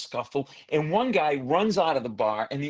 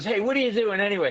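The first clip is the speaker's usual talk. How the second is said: put-on drunk voice, higher; 5 semitones higher than usual. Comedian on stage retelling what a drunk man asked him, imitating a drunk man. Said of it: "he was drunk".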